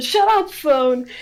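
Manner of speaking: high, vicious, violent little snap. Retelling what someone shouted at his ringing phone alarm: imitating a violent yell. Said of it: "He said it so violently".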